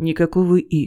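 said sharply. [name] cuts Dima off mid-sentence: said sharply. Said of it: "резко говорит Игорь".

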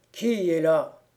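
big, loud, angry, sleepy voice. A sleeper in a corner of the dark room calls out in a big, sleepy, angry voice. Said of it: "une grosse voix de dormeur qui demanda avec colère".

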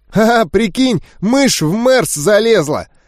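put-on high, nasal, slightly drunk voice. Narrator reads a voice from a bench speaking to its companion: tipsy nasal voice. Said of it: "подвыпивший гнусавый голос".

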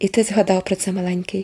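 ordinary delivery

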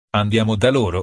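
ordinary delivery

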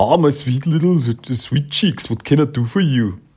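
put-on, heavily laid-on Austrian accent. Recapping an episode, copying a guy's voice in an Arnold Schwarzenegger-style Austrian accent. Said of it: "enjoyed the Austrian accent that that guy had".

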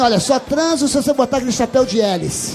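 normal talking voice

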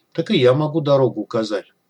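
ordinary delivery, nothing marked

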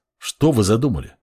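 ordinary talk

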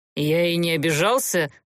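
stubborn, contrary, obstinate tone. Gert answers a girl who asks his forgiveness, obstinately. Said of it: "строптиво проговорил Герт".

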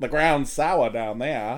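put-on deep, country, rural Maine accent. Asking whether the characters talk like this: deep country Maine accent. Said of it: "the deep country Maine accent".

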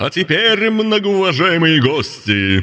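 high, loud, bellowing yell. An event host addresses the guests, yelling with a smile. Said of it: "с ей улыбкой завопил он".

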